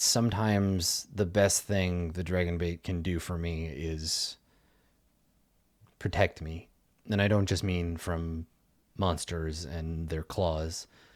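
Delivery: speaking quietly. Voicing a character talking away from the sleeping camp: speaking quietly. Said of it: "quietly, right, so he doesn't wake anybody else".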